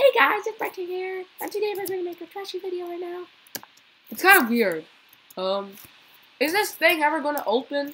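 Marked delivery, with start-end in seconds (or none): 0.0-3.2 high-pitched, goofy, silly joking voice. Describing the humor in their videos, the speaker shows their funny voice. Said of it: "I always sometimes use a funny voice".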